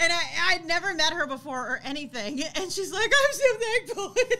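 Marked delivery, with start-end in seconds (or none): 3.1-4.1 high, loud, slow, tearful, freaked-out voice. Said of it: "she's crying and she's freaking out".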